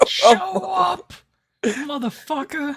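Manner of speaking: very high, loud, trash-talking wrestling-promo yell. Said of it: "Cutting a promo on the government man".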